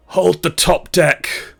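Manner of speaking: rough, creaky, snarled voice. As reavers board the ship, narrator reads wounded Captain Sardax: a dying snarl. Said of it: "she snarls with her dying breath".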